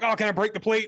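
put-on excited eager tone. Retelling what a game reviewer said: imitating an excited reviewer. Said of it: "He sounded so excited".

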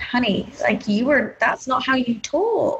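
normal talking voice

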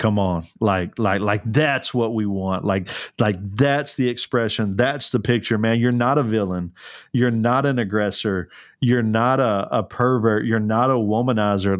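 plain

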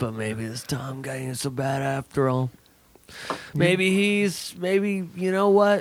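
put-on drunk, tipsy voice. Joking about the beer talking: put-on drunk voice. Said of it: "Who are you doing right now?".

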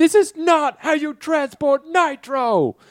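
shrill, very high, drawn-out, distressed yell. Retelling a film moment where Will Smith unveils the Nitro: imitating Will Smith yelling. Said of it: "yells out".

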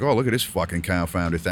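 ordinary delivery

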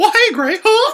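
high, loud squeaky voice. Acting out how he greeted you when you walked in the door freshman year, doing a Mickey Mouse impression. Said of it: "he would do a Mickey Mouse impression".

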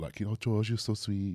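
put-on Brazilian Scouse accent. Retelling what a date said, imitating a brazilian scouse accent. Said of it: "that kind of accent on".

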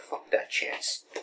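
slow, quiet mock whisper under the breath.

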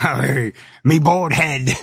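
put-on pirate voice. Trying the pirate talk again for the episode: pirate voice. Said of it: "rough on my voice there".

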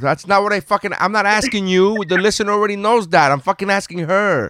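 shouting at full volume, pitched very high. Answering another speaker who replied out of turn, yelling. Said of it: "Are you fucking yelling at me".

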